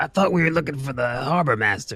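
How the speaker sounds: high-pitched put-on goblin character voice. Player speaks as their goblin character in a role-playing game: goblin voice. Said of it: "That's my goblin voice".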